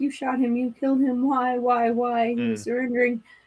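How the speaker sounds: put-on sobbing, horrified, terrified, tearful and pleading. Retelling what the wife said after police shot her husband: imitating a screaming, crying wife. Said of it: "His wife is screaming and crying and terrified".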